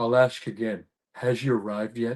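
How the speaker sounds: low, dropped voice, action-movie line delivery. Retelling a set story, quoting an actor waiting in a cryo chamber: Dolph Lundgren impression. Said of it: "Dolph Lundgren's hard to do".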